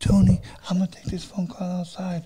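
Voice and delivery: put-on soft girl voice. Retelling what a girl said before stepping out: imitating a girl's soft voice. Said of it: "the same girl right here with the soft voice".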